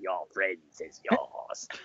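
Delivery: hushed, whispered film-character voice. Urged to do the voice, speaker quotes Return of the Jedi in the character voice. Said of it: "do the voice".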